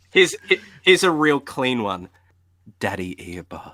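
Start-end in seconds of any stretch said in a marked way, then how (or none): 2.8-3.7 very low, very quiet, hushed ASMR murmur. Offering the others a clean clip to use, saying it in an ASMR voice. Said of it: "A S M R voice too".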